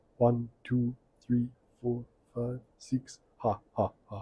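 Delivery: very soft, hushed vampire impression ending in a laugh. Counting the slides left during a talk: the Count impression. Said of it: "I was doing the count from Sesame Street".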